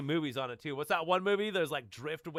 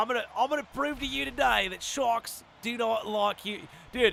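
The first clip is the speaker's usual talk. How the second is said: put-on Australian dude accent, pitched up; 8 semitones higher, 5 dB louder than usual. Quoting a marine biologist near sharks, in a put-on Australian accent. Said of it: "We'll do like an Australian voice".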